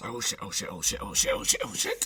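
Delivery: barely mouthed, repeated muttering under the breath. Playing a character reacting in the moment, muttering under breath. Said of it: "mouthing under my uh, under my breath".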